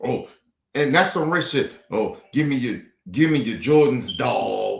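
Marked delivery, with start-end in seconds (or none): 2.3-4.8 low, lampooned, try-hard street-slang delivery.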